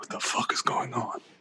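whispered, baffled tone. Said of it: "I would have been like".

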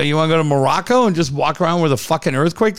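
usual speaking voice

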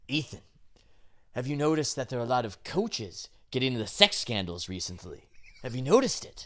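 sinister, shady, weird villain voice. Showing what a former coach would sound like, in a weird trench-coated villain voice. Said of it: "you just sound like a weird trench-coated villain".

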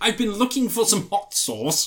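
put-on upper-crust posh accent.

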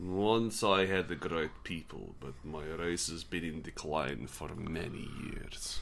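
very deep, hushed, put-on Russian dwarf accent. Speaker improvises a dwarf after the group suggests Russian dwarves: Russian dwarf accent. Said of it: "Perhaps Russian dwarves".

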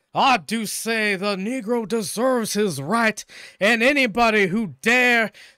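very loud, high cartoon rooster voice with Southern belle accent. Mimicking how a man talks, Foghorn Leghorn with Southern belle affect. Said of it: "with like the Southern bell sort of like affect".

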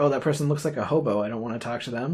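ordinary talk, nothing marked

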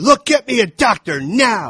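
very slow, drawn-out, high, loud scream. Retelling a movie scene where he demands a doctor: imitating a scream. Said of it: "And then he screams at her".

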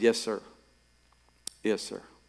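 put-on choked-up, uneasy, lump-in-the-throat voice. Retelling saying yes to God with a knot in the throat: retelling a choked-up reply. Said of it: "I said it with that knot in my throat".

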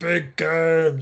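high, cartoonish puppet monster voice. Trying an Arnold accent that listeners reject, coming out in a Cookie Monster voice. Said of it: "that's like Cookie Monster now".

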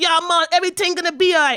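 loud, easygoing, laid-back put-on Jamaican accent. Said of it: "one side is real laid back".

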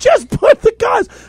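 mock, very high, high-pitched screaming. Retelling yelling an instruction at people laughing hysterically, retelling a scream. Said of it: "I'm screaming at them".

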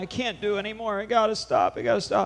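mock tearful, high voice broken by sobs. Retelling a tired woman's plea during a deliverance: imitating someone sobbing. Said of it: "She's sobbing".

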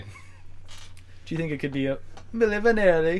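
lilting Jamaican accent. In a conversation, asking a question while trying a Jamaican accent. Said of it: "Tried my Jamaican accent".

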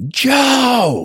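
put-on very high, drawn-out, stretched-out yell. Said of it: "She'll yell".

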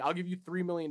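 imitated very serious, dead-serious tone. Retelling a woman's money offer, imitating a very serious tone. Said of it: "And she's like very serious".

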